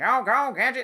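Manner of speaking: high cartoonish voice. Retelling how the actor performs the evil Gadget: Inspector Gadget cartoon voice. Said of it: "that sort of voice".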